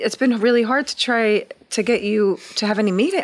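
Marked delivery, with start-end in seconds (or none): none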